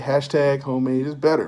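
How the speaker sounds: ordinary delivery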